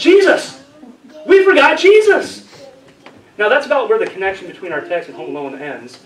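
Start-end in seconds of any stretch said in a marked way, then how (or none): 0.0-2.4 shrill, booming, very loud, high, drawn-out panicked yell. Retelling how Mary realized they left Jesus behind: imitating Mary yelling. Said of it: "she sits up and she yells".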